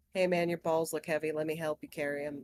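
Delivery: tired, low, completely flat, acted deadpan. Retelling what a boyfriend said to a security guard: imitating a deadpan, tired delivery. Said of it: "completely deadpan, just tired, just goes".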